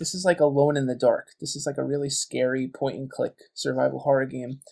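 ordinary talk

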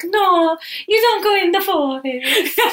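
put-on very high Italian grandma voice. Describing the voice imagined for the Nona puppet, Nona as Italian grandma. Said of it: "cute little Italian grandma being like".

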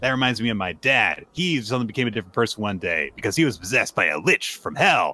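usual speaking voice

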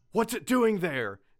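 very scared, fearful, high-pitched and rushed. Retelling what people in an episode say on seeing the dog, mock very scared voice. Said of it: "in a very scared voice".

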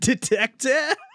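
high, laughing, mild mock yell.

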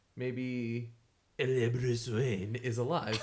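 loud, slow, terrible fake French accent. Arguing about whether bruce wayne is dead, in a bad french accent. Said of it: "that was my French accent".

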